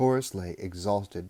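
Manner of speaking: plain reading voice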